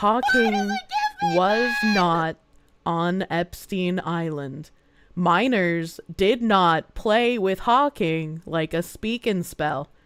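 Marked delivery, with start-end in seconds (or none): 0.0-8.4 very slow, low, deliberate delivery, drawn out word by word. Speaker addressing chat, correcting a joke, saying it really slowly. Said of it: "I'm gonna say this really slow".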